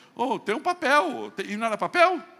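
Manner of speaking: mocking exclamation, drawn out high and loud.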